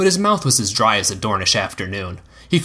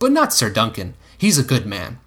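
usual speaking voice

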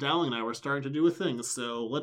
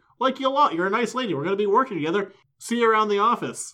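chipper, upbeat, pitched-up and loud tone; 7 semitones higher, 8 dB louder than usual. Retelling a scene, choosing the upbeat Dowling voice over the Buffy voice. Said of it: "my upbeat Dowling voice".

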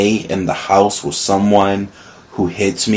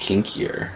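sly, breathy, devious whisper; 9 dB quieter than usual. Telling listeners at home about recently getting kinkier, sly devious tone on kinkier. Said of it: "I say with a devious voice".

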